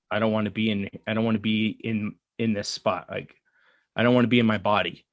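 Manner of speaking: normal talking voice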